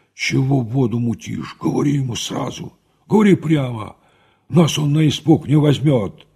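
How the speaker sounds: hushed whisper. Narrator reads Nekrasov speaking to Lopakhin: whispered. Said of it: "зашептал".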